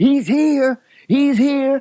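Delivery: stretched-out screaming call. Retelling spotting the car coming up the road: imitating own past scream. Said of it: "I started screaming".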